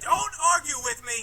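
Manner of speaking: shouting. A character argues back at another early in the morning, yelling. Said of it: "Can we not yell this early".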